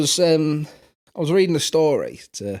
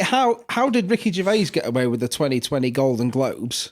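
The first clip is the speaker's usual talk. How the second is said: plain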